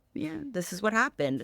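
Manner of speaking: plain, matter-of-fact, no-fuss delivery. Retelling grandmother's way of telling sad stories: imitating grandmother's matter-of-fact tone. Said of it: "very much like this in all the stories".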